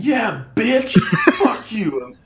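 very high-pitched, screaming, taunting tone. Speaker retells teabagging an opponent as the team wins: retelling own screaming. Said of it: "I was screaming".

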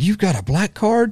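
put-on top-of-the-lungs shriek, shrill and very high. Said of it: "at the very top of her lungs screamed".

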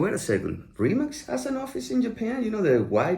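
high, surprised, incredulous disbelief.

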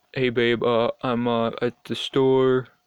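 put-on, mock dopey, dumb man voice. Showing how a man calls his partner to say he's coming home: dumb guy voice. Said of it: "I just automatically go to that voice".

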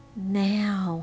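in a whisper. The choir director cues Frances to go on, whispered. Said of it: "he whispered".

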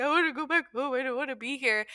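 mock tearful crying child voice, pleading tone. Retelling crying back to mom after being cut from the group: imitating own past crying. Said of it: "crying back to my mom and being like".

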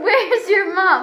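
put-on screaming. Retelling being lost and how a lady screamed at everyone, retelling a lady screaming. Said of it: "she started screaming at everyone".

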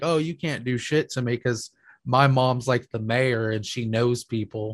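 ordinary talk

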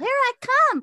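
shrill, very loud, high put-on seal voice. Speaker pretends to be a hopping seal: put-on seal voice. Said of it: "This is me as a seal".

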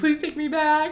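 play-acted tearful sobbing, pitched high. Retelling calling her a week later and begging, retelling a sobbing plea. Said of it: "and I'm sobbing".

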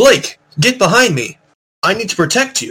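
loud high shout. Playing a character who yells to Blake, a free action, yelling. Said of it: "yelled to Blake with a free action".

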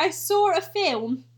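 put-on generic British accent. Mocking how british people talk, in a british accent. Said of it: "British people be like".

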